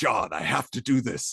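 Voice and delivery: mock fervent, impassioned, earnest delivery. Retelling a character's lines after he discovers his suit: imitating passionate speech. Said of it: "he's much more passionate".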